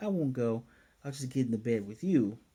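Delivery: ordinary talk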